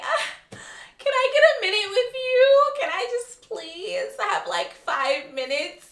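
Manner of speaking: mock tearful sobbing, very high pitched. Imagining a contestant popping out of a costume to plead: imitating someone crying. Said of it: "crying and unzip it and cry and say".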